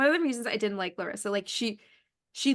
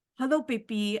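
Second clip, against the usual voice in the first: fake, not-quite British accent. Mocking a man whose British accent is clearly not British, fake British accent. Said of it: "it's not British".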